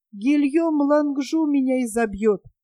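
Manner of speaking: ordinary delivery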